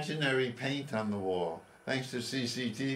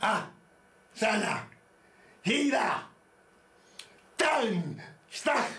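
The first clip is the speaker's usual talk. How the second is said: very high, drawn-out, all-out put-on karate cries; 11 semitones higher, 4 dB louder than usual. Speaker follows a prompt to do fake karate using only the voice, all-out fake karate shouts. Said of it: "all-out fake karate using your voice".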